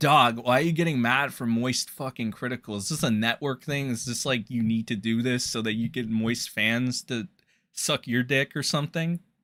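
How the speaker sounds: low, soft, calm voice.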